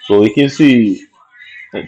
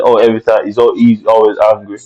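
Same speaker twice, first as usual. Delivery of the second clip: ordinary delivery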